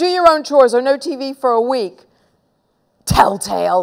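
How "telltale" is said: spat out in a hiss. Henry to Peter, who told on him to Mom: hissed. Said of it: "hissed Henry".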